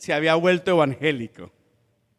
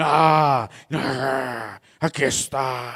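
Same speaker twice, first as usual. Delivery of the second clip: thick, low, slow possessed demon voice. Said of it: "hablé normal, pero".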